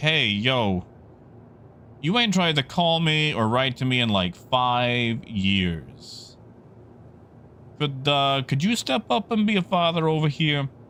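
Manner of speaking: put-on Jersey accent. Retelling Alexander speaking to his father, with a Jersey accent. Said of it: "I'm giving him this like Jersey accent".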